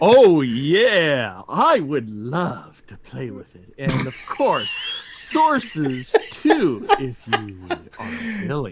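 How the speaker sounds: badly done, swooping, eager, gushing enthusiasm. Reading a comment aloud on request, in an enthusiastic voice. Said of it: "read that comment to us in your best enthusiastic voice".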